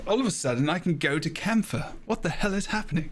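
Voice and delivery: put-on posh English voice. Speaker acts out a reaction to a sudden game change in a posh English accent. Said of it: "In that very posh English voice".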